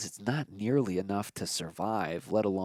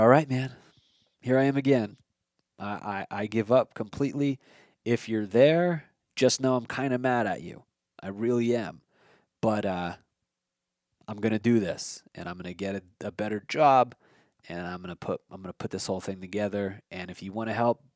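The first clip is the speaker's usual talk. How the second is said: ordinary talk, nothing marked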